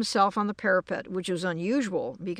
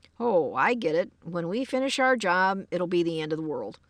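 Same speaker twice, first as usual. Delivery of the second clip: plain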